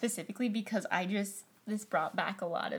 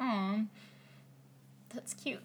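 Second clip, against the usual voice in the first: breathy, half-whispered, sarcastic little aw; 5 dB quieter than usual. Reacting to another speaker's childhood username: sounding sarcastic. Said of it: "That sounded so sarcastic".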